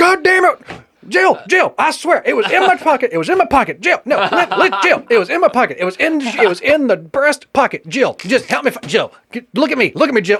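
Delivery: frantic pleading. Imitating Joe Biden frantically pleading with Jill over lost cocaine: Joe Biden talking fast. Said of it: "you think Joe Biden could even talk that fast".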